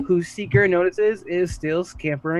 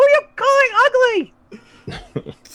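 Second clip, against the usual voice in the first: very high, drawn-out, squeaky cartoon voice; 6 dB louder than usual. Answering back after being called ugly small things, in Mickey Mouse voice. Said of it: "Mickey Mouse, apparently".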